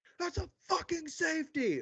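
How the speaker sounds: high-pitched, mock drunken yelling.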